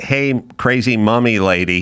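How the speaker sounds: ordinary talk, nothing marked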